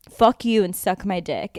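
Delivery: mock heated, furious, angry ranting delivery. Retelling the end of a scathing voicemail: imitating a heated angry rant. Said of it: "he was so heated".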